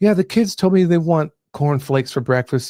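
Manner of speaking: put-on mild, easygoing, demure, laid-back tone. Mocking a trad wife's video, imitating her demure, laid-back voice. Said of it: "got this very demure, like, laid back kind of voice".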